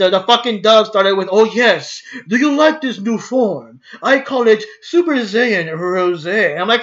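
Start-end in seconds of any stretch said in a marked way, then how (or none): 1.3-6.6 put-on British accent, rosé drawn out. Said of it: "a British accent or something when he transforms".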